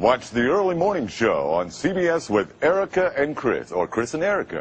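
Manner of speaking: wide-ranging, booming announcer promo voice.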